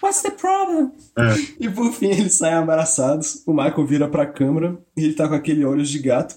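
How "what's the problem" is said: very high, wispy, thin little voice. Retelling the moment he asks her what is wrong, in Michael's thin high voice. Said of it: "com aquela voz fininha dele".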